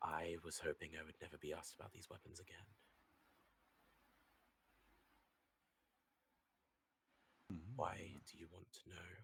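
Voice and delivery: voice dropped quiet. The game master, voicing a woman in a tent, answers about the weapons in a lowered voice. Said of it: "She kind of lowers her voice".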